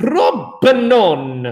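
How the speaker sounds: propanone pronounced with a put-on Italian accent. Explaining ketones and naming the smallest one, italian accent. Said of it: "Got to say it with an Italian accent".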